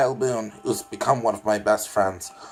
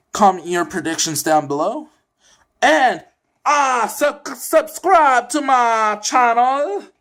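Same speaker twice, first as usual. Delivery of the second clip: very high, pretty terrible Italian accent; 13 semitones higher, 4 dB louder than usual. Video maker signing off and asking viewers to subscribe, terrible italian accent. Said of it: "That's my Italian accent, pretty terrible".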